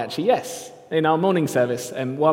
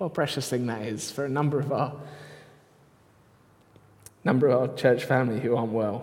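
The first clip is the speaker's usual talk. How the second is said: soft voice, overcome with emotion; 3 semitones lower, 6 dB quieter than usual. Addressing the church family, speaking while emotional. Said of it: "Sorry, I'm emotional".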